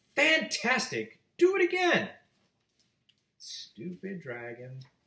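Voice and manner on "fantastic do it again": very high, stretched, drawn-out yell. Narrator reads a character shouting at a tired dragon, shouting. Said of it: "Elizabeth shouted".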